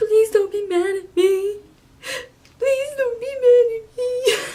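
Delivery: bawling, tearful pleading, very high and loud. Retelling a phone call to her mom, she acts out her bawling plea. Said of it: "I'm bawling".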